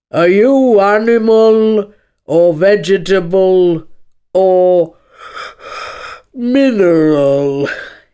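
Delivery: loud, words broken up by yawns. Narrating, the lion questions Alice, yawning at every other word. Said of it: "yawning at every other word".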